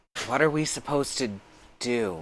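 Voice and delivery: very softly spoken, hushed, up close. Voicing a character leaning in very close to ask: very soft voice. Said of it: "and says very softly".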